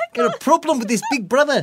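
poor, bad New Zealand accent, very high-pitched. Explaining Australia and New Zealand's rivalry, voicing a New Zealander: bad Kiwi accent. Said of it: "I can't do a Kiwi accent properly".

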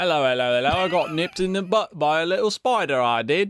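bad put-on British accent, laid on thick. Joking about whether Peter Parker is British, doing a British Spider-Man voice. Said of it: "I feel like that's more Australian".

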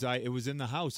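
usual speaking voice

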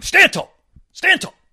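mock very high, loud hollering scream. Retelling how a coach screams at players: imitating Tim Brewster screaming. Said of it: "where he's screaming at the".

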